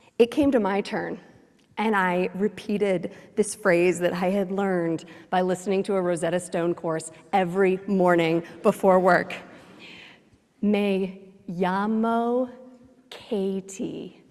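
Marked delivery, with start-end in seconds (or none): 10.6-14.1 put-on heavy, laboured American accent speaking Spanish. Speaker retelling her turn introducing herself in Spanish, thick American accent in Spanish. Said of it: "with such a thick American accent".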